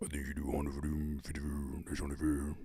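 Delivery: very deep, very soft, hushed mocking voice. Asked to mock someone in a deeper voice, repeating the line in a deeper mocking voice. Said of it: "Deeper voice when mocking, please".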